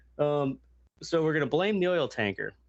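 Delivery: ordinary delivery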